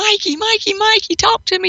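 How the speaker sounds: crying, pleading voice. Retelling own repeated pleas for a sign: imitating own past crying. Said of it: "I've been crying".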